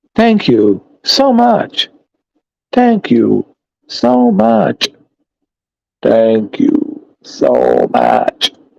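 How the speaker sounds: level, flat voice sounding like a robot. Repeating thanks over and over, sounding like a robot. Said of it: "I'm gonna start to sound like a robot".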